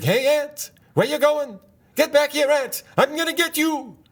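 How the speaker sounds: very high-pitched put-on Yiddish-inflected accent. Speaker explaining a Saturday morning cartoon segment to a listener, Jackie Mason Aardvark voice.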